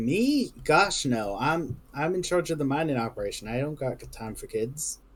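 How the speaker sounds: prickly, defensive, dismissive sarcasm. Voicing a character asked if she wanted a child: sarcastic, defensive denial. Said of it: "do I detect sarcasm? Do I detect, like, defensiveness?".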